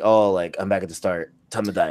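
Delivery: ordinary talk, nothing marked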